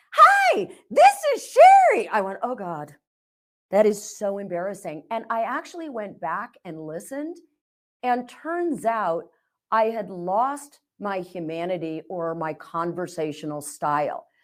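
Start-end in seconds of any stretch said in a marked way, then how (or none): 0.1-2.1 very high, very loud sales-pitch voice with swooping pitch. Quoting her son imitating how she talks to clients, in a sales pitch voice. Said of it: "because you were using pitch voice".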